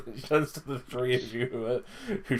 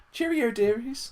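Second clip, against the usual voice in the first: very high, gentle, put-on grandmotherly tone; 12 semitones higher, 3 dB louder than usual. Voicing a factory worker pointing the party to someone: soft grandmotherly voice. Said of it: "putting on a soft grandmotherly voice".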